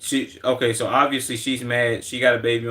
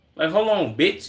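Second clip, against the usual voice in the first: ordinary talk, nothing marked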